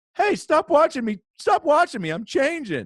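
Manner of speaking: very high, sing-song, swooping silly joke voice. Retelling what he said to the principal on a Zoom call, in a put-on voice. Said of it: "And I did it in that voice".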